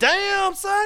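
put-on hyped voice. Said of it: "I was like".

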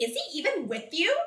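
acted attitude-filled tone. Recounting a voice heard in meditation, believed to be the speaker's higher self: imitating a sassy voice. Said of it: "so sassy".

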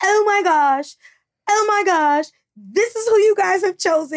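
mock overwrought meltdown.

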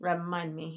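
put-on quiet muttering. Recapping a TV episode, quoting Fez muttering under his breath. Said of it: "he kind of says that so quietly".

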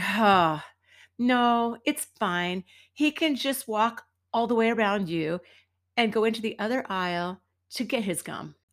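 ordinary talk

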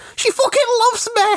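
fake tearful yelling. Acting out a dumped rival on the sea front: mock crying shout. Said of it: "he's crying on the front".

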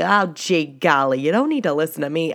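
put-on Midwestern accent. Talking to Brianna and listeners, in a mock Midwestern accent like John Wayne. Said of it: "that kind of Midwestern".

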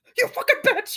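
high-pitched, furious, raging yell. Picturing being stabbed at dinner for no reason: imitating an angry outburst. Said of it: "this outburst".

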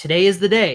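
ordinary delivery

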